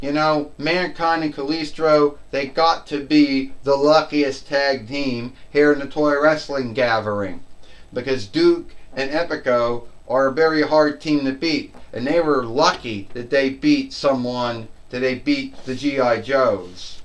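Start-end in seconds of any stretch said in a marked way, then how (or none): none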